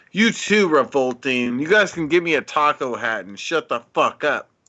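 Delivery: heated, angry, exasperated, fed-up rant. Answering chat's suggestion of a taco hat: angry. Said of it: "I'm getting so angry right now".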